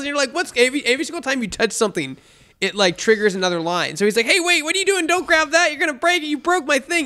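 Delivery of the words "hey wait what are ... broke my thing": very high, shrill, all-out hollering at full lung. Describing a game where a character yells whenever you touch things, imitating Morty yelling. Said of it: "yelling at you at the top of your lungs".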